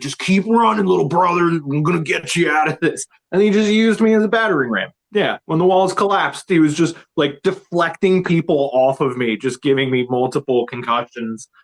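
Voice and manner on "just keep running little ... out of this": put-on Jersey dude voice, much higher. Retelling what a man told him while running toward people, imitating a jersey dude. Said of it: "like this Jersey dude in a wife beater".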